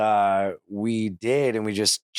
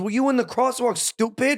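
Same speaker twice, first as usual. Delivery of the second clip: put-on New York accent; 13 semitones higher than usual. Retelling an argument with a woman from New York at a crosswalk: put-on New York accent. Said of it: "that accent. She came from New York".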